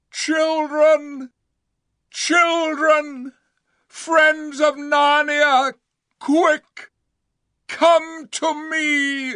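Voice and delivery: great, high, far-carrying, drawn-out cry. He suddenly calls out to the children and the friends of narnia: crying out in a great voice. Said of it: "he suddenly cried out in a great voice".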